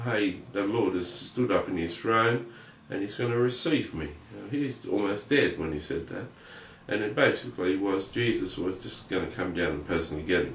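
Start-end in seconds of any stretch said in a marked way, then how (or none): none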